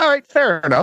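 high, amused, resigned, laughing voice.

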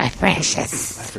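full fantasy cave-creature character voice. Answering a joke about Gollum: Gollum voice. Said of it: "Or Gollum?".

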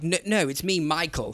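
put-on plummy posh accent, soft, hushed, and slow. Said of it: "he put on a posh accent and was like".

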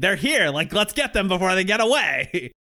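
put-on, high-pitched hollered yell. Retelling a game scene where a character calls to soldiers: imitating someone yelling. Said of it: "she's yelling".

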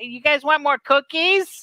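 put-on very high fifty-year-old Midwestern housewife voice. Describing a typical ai character: midwestern fifty-year-old housewife voice. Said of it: "Midwestern fifty-year-old housewife A I that's just like".

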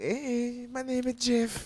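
put-on gangster voice, very high, slow, stretched out.

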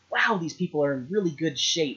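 ordinary talk, nothing marked

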